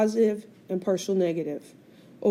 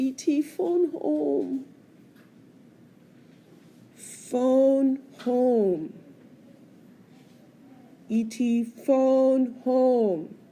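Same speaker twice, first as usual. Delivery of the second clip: put-on alien voice, pitiful and very slow; 4 semitones higher than usual. Recalling E.T. pointing at the sky in the movie, pitiful E.T. voice. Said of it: "in this pitiful voice".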